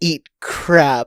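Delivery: ordinary talk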